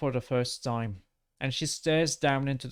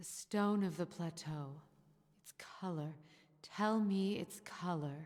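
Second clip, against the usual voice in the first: hoarse, rasping whisper; 5 semitones higher, 10 dB quieter than usual. Narrator voicing a woman speaking to you from a distance, in a hoarse whisper. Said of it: "she whispers to you, hoarsely".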